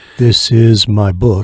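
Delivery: dull, lifeless, flat, boring monotone. Describing an author shilling his book on the radio, monotone, boring voice. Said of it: "if the guy sounds monotone and boring and dull".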